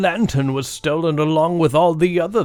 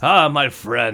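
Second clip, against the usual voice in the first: put-on drunken voice, much slower; 5 semitones lower than usual. Narrator voicing a drunk man hugging an adventurer, drunk character voice. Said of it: "in this awkward drunk hug".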